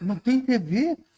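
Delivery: acted, very high, outraged, indignant disbelief. Speaker recounts a man's reaction on learning the speaker has no tv: imitating indignant disbelief. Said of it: "Aí ele ficou indignado".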